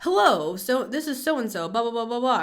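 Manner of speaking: polished professional phone voice. Describing a person who changes at work, imitating their put-on customer service voice. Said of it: "putting on their like customer service voice".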